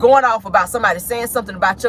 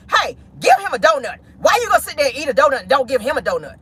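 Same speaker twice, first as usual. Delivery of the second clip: acted-out yelling; 3 semitones higher than usual. Retelling how a woman yelled at her daughter, imitating someone yelling. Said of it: "yelled at her daughter to say".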